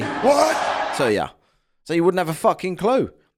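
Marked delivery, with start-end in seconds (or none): 0.0-1.0 puzzled, bewildered shouting. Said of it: "they're more likely to say".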